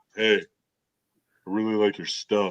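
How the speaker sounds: dropped, low, hushed voice, very slow and drawn out. Retelling meeting a celebrity for an autograph: voice dropping low. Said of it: "My voice dropped".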